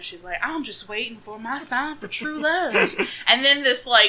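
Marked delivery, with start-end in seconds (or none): 0.4-2.7 put-on thick, laid-on Southern accent. Recounting the film's opening beach scene, quoting Marina in a thick Southern accent. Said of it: "she's got this thick Southern accent".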